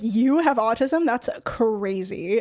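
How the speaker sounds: slow, sarcastic, put-on amazement and disbelief. Retelling again how friends reacted to the ADHD question: imitating sarcastic disbelief. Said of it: "being sarcastic".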